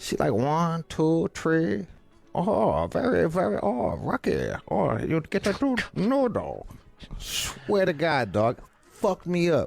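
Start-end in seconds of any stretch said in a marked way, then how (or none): 0.3-6.7 fake, laid-on, sing-song Chinese accent. Retelling how the lady waiting on the speaker answered: imitating a chinese accent. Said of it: "she sounded like Chinese".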